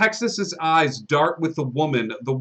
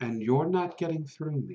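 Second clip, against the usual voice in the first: hushed, soft, close-up half-whisper; 7 dB quieter than usual. Voicing a guard who leans down to a player: half-whispering in ear. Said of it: "whisper in your ear".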